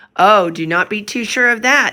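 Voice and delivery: severe, commanding tone. Narrator reading a voice at Elder Brewster's side answering him: stern voice. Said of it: "said a stern voice by his side".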